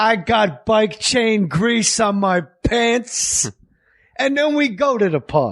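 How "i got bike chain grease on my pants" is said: put-on tough comic persona voice, pitched higher. Retelling a comic's clean bit, imitating Andrew Dice Clay's Dice voice. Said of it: "He's still doing the voice".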